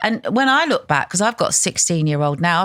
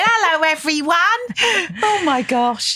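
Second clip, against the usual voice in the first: high-pitched Essex accent, spoken very slowly; 11 semitones higher than usual. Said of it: "I used to talk like that".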